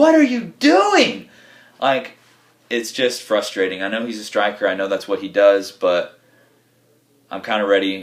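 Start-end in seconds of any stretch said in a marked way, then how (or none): 0.0-1.3 very high, loud, exasperated, frustrated shout. Recalling a striker wasting a shot, retelling a scream at the TV. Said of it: "I'm just screaming at the T V".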